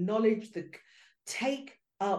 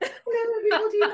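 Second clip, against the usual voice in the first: put-on very high, loud, horsey upper-class English accent; 13 semitones higher, 5 dB louder than usual. Recalling having to introduce yourself to everybody, in a high equestrian English voice. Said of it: "My voice gets high and I start speaking equestrian English".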